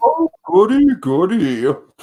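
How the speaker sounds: very high cartoon voice with swooping, bouncing pitch. Repeating the character's line, imitating Marvin the Martian. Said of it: "And what does Marvin say".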